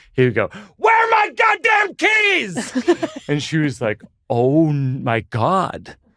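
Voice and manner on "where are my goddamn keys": furious, very high-pitched angry yell. Doing an impression of dad for her, shouting, imitating dad. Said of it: "I'm gonna shout right now. This isn't me shouting. I'm doing an impression of my dad".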